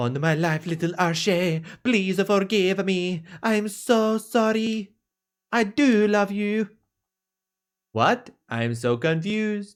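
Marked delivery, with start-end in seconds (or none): 0.0-6.7 put-on French accent, much lower and quieter. Voicing the girl's mom in the story scene, in a french accent. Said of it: "I guess I should give her mom a French accent too".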